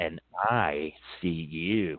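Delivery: strange, very slow voice from the throat. Retelling what an ancient being answered: imitating a totally different voice. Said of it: "Total different voice".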